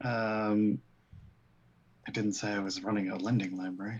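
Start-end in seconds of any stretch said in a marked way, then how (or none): 2.1-4.0 muttering under one's breath. Playing a character, answering a question: muttered under breath. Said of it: "I say under my breath".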